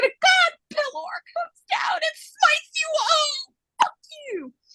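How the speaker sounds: acted, very high-pitched sobbing crying voice. Correcting the story to what they really said while crying, imitating own crying. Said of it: "I just cried and said".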